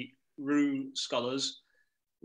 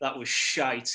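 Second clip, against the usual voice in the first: plain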